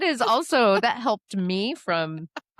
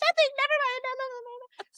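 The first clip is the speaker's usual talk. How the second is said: very high, flustered put-on tone; 4 dB quieter than usual. Retelling a conversation about waxing, imitating mom brushing it off. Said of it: "And she's like".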